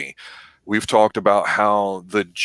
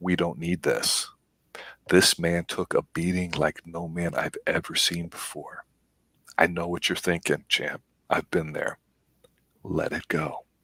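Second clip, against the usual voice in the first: hushed, quiet whisper, even quieter; 3 semitones lower, 8 dB quieter than usual. Retelling a movie trainer's words as he leans over the desk: imitating a quiet whisper. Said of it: "he almost kinda quietly whispers".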